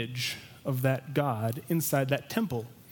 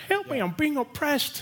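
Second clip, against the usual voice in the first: horrible fake English accent, pitched very high; 13 semitones higher than usual. Speaker quoting a scene from Monty Python and the Holy Grail; horrible Monty Python English accent. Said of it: "That was my horrible, horrendous English accent".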